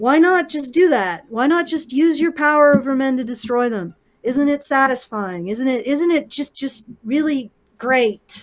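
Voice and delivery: loud, heavy, mocking sarcasm. Asking mock questions, then admitting it was sarcasm: sarcastic. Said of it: "That's sarcasm, by the way".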